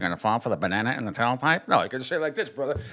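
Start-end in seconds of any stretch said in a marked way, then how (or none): 0.0-1.7 mocking, taunting, needling delivery. Quoting a movie scene about a banana in the tailpipe: Eddie Murphy impression. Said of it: "Eddie Murphy in Trading in a Beverly Hills Cop when he says".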